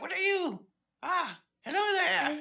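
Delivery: put-on old gnome lady voice. A game master voices an old gnome lady greeting the players, old gnome lady accent. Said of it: "I love the accent".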